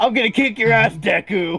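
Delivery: loud, high, hot-headed, antagonistic tone. Suggesting how the hot-headed, antagonistic character should sound: hot-headed antagonistic voice. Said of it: "this hot-headed, like, antagonistic kind of person".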